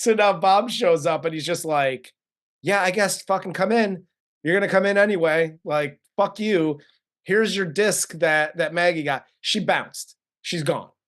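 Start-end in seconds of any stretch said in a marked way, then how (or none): 2.6-10.9 world-weary, jaded, couldn't-care-less delivery. Retelling a movie scene where J P lets Bob in: jaded J P voice. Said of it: "J P's so fucking jaded".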